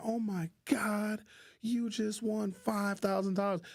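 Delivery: mock very high, thrilled, drawn-out excited calling. Retelling telling a winner about the prize: imitating own excited announcement. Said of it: "It was exciting for me".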